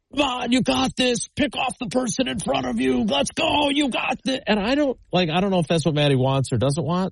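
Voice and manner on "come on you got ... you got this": acted-out, shrill, very high-pitched screaming. Retelling what parents at a race screamed at runners: imitating parents screaming. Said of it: "they're just screaming".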